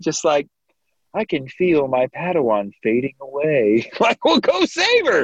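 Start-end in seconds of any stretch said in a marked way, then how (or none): 0.0-3.9 breezy, offhand, super casual, unbothered, not sad. Viewer recapping a scene acts out Luminara's reaction to her Padawan, mock-casual Luminara. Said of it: "super casual, not sad".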